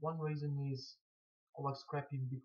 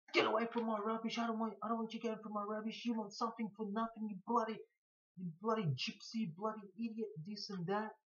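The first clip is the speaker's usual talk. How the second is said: high, yelled, furious screaming rant. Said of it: "will just scream at you".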